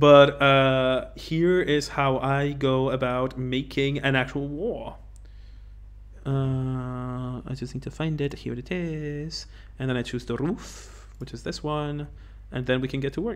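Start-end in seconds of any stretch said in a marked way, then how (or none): 1.2-13.4 soft, small Italian man voice. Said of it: "Is that your level building voice? You are a tiny Italian man".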